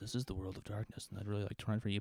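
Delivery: very quiet, demure, hushed tone. An introvert imagining a demure stage introduction, speak in a hushed tone. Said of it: "I spoke in a hushed tone".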